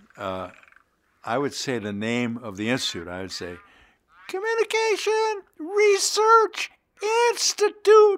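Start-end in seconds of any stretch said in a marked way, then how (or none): 4.3-8.2 very high falsetto, pushed even further. Recalling what he would say at the end of each session, in falsetto voice. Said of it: "I would say in falsetto voice, push it up a little bit".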